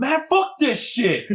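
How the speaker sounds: full-on furious screaming, high and drawn-out. Recounting an argument with a former partner, retelling own angry screaming. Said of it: "I was like full on like screaming".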